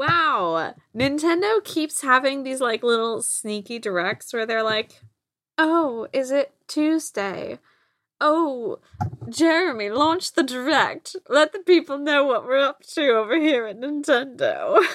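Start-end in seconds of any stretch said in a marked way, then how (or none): 5.6-14.8 put-on Tennessee Southern belle accent. Imitating Nintendo announcing a surprise direct: put-on Tennessee River Queen accent. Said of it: "This is our accent now".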